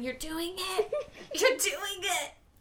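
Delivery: eerie, very low, hushed ghost voice. Player voicing a ghostly self to a dreaming character, ghostly voice. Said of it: "the little like ghostly me saying".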